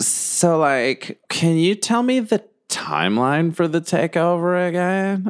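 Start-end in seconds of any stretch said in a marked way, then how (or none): 1.3-5.3 put-on, high, slow, fabulous tipsy drawl. Asking the game master a question for her: fabulous drunk voice. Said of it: "We all have to put on that voice".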